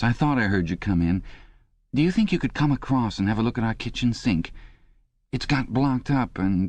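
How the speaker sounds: high, droning, dreary, complaining whine. A neighbour's wife, standing at the door, speaks in a dreary, whining voice. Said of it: "she began in a dreary, whining sort of voice".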